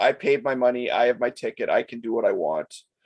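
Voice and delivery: ordinary delivery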